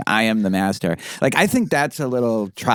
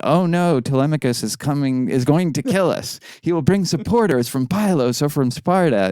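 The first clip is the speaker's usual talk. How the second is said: mocking, sarcastic fake alarm, high pitch; 5 semitones higher than usual. Retelling how a lead suitor makes fun of Telemachus: imitating sarcastic fake alarm. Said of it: "He's like".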